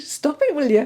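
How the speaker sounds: high, teasing tone through laughter. Imagining a late brother's reaction to the tears: imitating brother laughing at speaker. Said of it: "he'd be laughing at me going".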